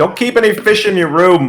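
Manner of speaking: loud yelling, shouting. Voicing a barkeep calling out from behind the bar: yelling from behind the bar. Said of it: "you can hear Torum yell from".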